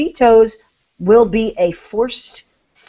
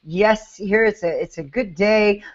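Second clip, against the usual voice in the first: put-on calm, even, mildly amused tone; 4 dB quieter than usual. Imitating how the Senate leader spoke today: imitating a calm, bemused tone. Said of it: "in a very calm voice, in a very, um, you know, bemused sort of".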